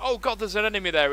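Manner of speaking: fake frightened gasp.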